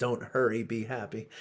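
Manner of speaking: plain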